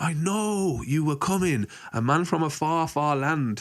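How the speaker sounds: very slow, high, drawn-out shriek. Retelling what a lady in a hammock screamed: imitating someone screaming. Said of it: "And she screamed".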